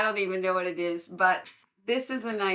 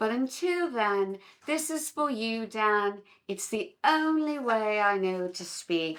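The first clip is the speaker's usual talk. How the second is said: put-on upper-class English accent; 2 semitones higher than usual. Speaking to a viewer who says no one talks this way: put-on Queen's English accent. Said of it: "no one speaks in the Queen's English".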